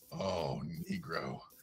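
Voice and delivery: very low, soft, seductive, sexy murmur. Imagining someone saying a line to her partner: low sexy voice as Rana. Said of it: "in a low, sexy voice saying to him".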